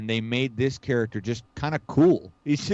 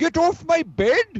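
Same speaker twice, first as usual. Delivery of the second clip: put-on Indian accent, pitched very high; 4 dB louder than usual. Retelling a Bond film scene as an Indian man, in an Indian accent. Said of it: "don't do the voice".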